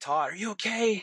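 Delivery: frightened, high, fearful yell. Recounting a truck accident, the speaker re-enacts calling to todd, retelling a yell. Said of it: "I'm yelling".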